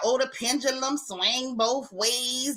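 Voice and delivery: mocking, mockingly imitated voice. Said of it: "Candace talking about".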